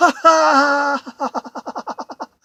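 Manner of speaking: loud, high, big belly laugh. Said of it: "bursts out laughing with a big belly laugh".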